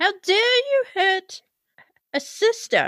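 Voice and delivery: very high, hollered in-character yell. In a tabletop game, after taking a shot to the knee, a player's character yells out. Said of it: "and I'll yell out".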